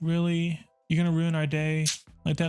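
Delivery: mock pitiful pleading tone. Retelling customers asking for a discount: imitating a pleading customer. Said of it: "did a whole entire pity thing".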